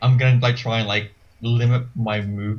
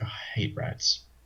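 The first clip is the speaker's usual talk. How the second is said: muttering a curse under breath, quieter; 10 dB quieter than usual. Playing a character tricked into a basement, cursing under breath. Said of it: "curse, like, um, under my breath".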